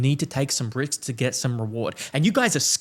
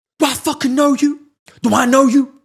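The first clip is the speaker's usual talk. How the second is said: very loud, very high, shrill, unhinged deranged screaming; 11 semitones higher, 9 dB louder than usual. Telling a subway story, the speaker retells a stranger's deranged scream at the speaker. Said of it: "He screams at me".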